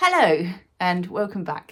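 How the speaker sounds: posh-sounding voice. Opening the recording after a long break, a posh-sounding greeting. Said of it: "that sounded posh".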